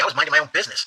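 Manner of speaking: ordinary talk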